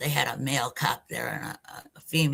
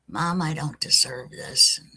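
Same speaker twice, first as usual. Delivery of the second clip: put-on tearful crying voice. Retelling the last words someone said in the hospital: imitating someone crying. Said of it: "she's crying".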